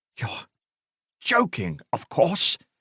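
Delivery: choked, strangled, breathy half-whispered voice. Reading a novel, the assistant commissioner reacts to a suggestion: strangled voice. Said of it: "he said in a strangled voice".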